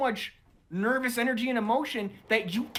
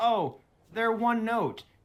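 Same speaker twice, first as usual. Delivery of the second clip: ordinary delivery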